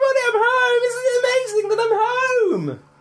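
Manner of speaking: very high, yowling, screaming cat voice. Speaker voices their cat arriving home: imitating a screaming cat. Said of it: "what she's screaming about".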